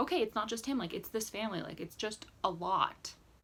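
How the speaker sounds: ordinary talk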